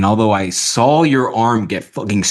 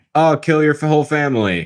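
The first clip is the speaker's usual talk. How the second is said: mock flat deadpan delivery, higher pitch; 5 semitones higher than usual. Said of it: "Just put Siri voice in there".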